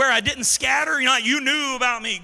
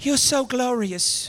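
put-on English accent. Mocking how people picture Jesus talking: mock English accent as Jesus. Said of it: "Everybody thinks Jesus has the English accent".

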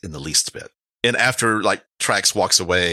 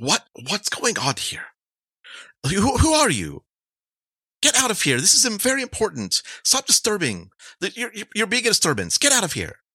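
put-on woman's character voice, much higher; 13 semitones higher than usual. In the scene, the woman scolds someone disturbing her: woman character voice. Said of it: "The woman says".

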